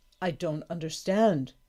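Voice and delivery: ordinary delivery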